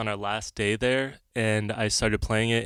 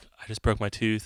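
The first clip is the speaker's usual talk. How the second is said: mock-panicked voice. Retelling the reaction to biting into something hard: retelling freaking out. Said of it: "I'm like freaking out".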